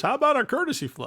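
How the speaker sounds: very high, bright radio announcer voice. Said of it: "in his Pettingill announcer voice".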